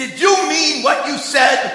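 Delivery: eager, loud shouting.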